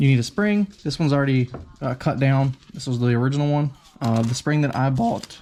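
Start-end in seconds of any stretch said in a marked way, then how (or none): 4.2-5.4 voice cracking. Showing the fittings and spring they bought, voice cracking. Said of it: "ooh, voice crack".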